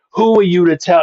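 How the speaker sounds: contained, mildly angry yell. Speaker re-enacting screaming at a woman in the car, retelling screaming at someone. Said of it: "I'm screaming at her bloody murder".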